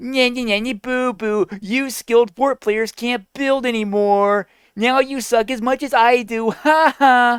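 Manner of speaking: mocking, high, childish nyah-nyah taunting voice.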